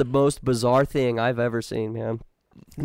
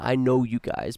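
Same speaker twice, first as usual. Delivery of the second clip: put-on weird demonic voice, slower. Recounting a man they walked up to, the speaker is imitating a weird demonic voice. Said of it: "he said in his weird demonic voice".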